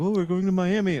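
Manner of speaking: bad put-on British accent. Mimicking a british couple coming in, worst british accent ever. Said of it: "That was the worst British accent ever".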